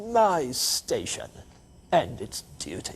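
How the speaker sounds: put-on broad English accent. Speaker says an essay title to make its point: broad English accent. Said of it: "if you say it with a broad English accent".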